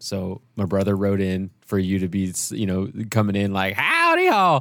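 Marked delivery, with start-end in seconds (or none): 3.7-4.6 put-on old prospector voice, very high. Recalling a Western desert town story arc, a player quotes an entrance in an old prospector voice. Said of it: "your like old prospector voice".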